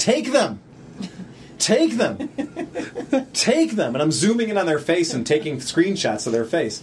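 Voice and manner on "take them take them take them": insistent, high, drawn-out, swooping, repeated yelling. Recalling watching people on their phone, retelling yelling at the phone. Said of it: "I was yelling at my phone".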